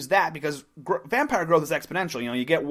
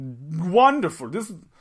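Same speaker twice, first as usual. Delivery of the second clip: put-on villainous vampire voice; 3 dB louder than usual. Retelling a story's plot, voicing the main vampire's reply, vampire voice. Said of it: "I lost the vampire voice".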